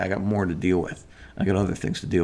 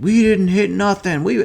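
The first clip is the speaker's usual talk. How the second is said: very high, shrill screaming; 13 semitones higher, 8 dB louder than usual. Retelling a car dispute, quoting the other driver's wife: imitating her yelling. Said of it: "she starts yelling at me".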